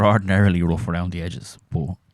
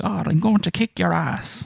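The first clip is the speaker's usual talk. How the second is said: bad exaggerated fake Irish brogue, very high, diddly-eye; 11 semitones higher than usual. Imitating a tv actor's overdone irish accent: bad fake irish accent. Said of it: "big, like, diddly eye fucking accent".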